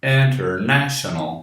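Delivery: "international" with strong "na", lighter "in". Portuguese lesson on English word stress, saying international with main stress on na. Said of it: "E esta terceira é a mais forte. ... Mas a primeira também é forte. É menos forte que a terceira".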